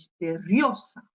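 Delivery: misteriosa with heavy stress on the rio syllable. Reading Spanish words aloud, explaining in French which syllable is stressed: stress on the rio syllable. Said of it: "J'ai appuyé sur cette syllabe, hein, et plus précisément sur le O".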